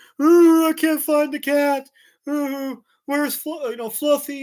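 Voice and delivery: sobbing in a very high, loud voice. Retelling how a lost sister searched for the cat: imitating someone crying. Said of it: "she's, like, crying".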